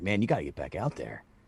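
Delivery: low, soft coaxing voice. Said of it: "And they're like".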